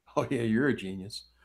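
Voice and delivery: mocking, belittling, dripping, derogatory sarcasm. Showing how people say it to be derogatory: derogatory sarcastic tone. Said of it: "people say it, like, and it make it be more derogatory".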